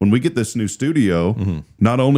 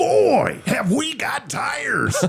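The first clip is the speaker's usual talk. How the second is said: raspy bubbly voice, very high, very slow, swooping, drawn-out; 4 dB quieter than usual. Retelling how a friend repeated a tire tagline: imitating Dave's raspy bubbly voice. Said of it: "And so Dave would go".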